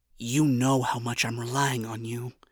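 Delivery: hushed whisper. A narrator voices one character speaking to another, whispered. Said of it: "Charlie whispered".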